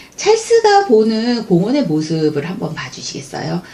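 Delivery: plain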